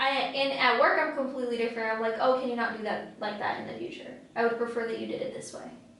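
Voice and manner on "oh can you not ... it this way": fast, rushed, polite tone. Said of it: "I'm saying it very quickly on purpose".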